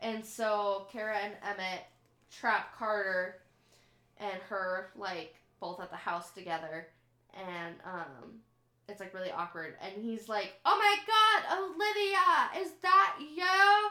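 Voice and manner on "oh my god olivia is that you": shrill, very loud, high, slow, drawn-out scream. Retelling what he said when trapped at the house with her, retelling him screaming. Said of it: "am I screaming? I'm screaming".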